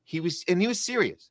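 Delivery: ordinary delivery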